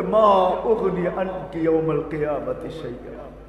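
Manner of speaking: high, loud, wailing crying-out lament. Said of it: "চিৎকার দিয়া বলছে".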